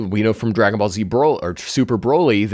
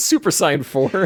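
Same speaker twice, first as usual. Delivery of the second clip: put-on sardonic friendly voice, higher; 7 semitones higher than usual. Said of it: "in a sardonic and friendly way".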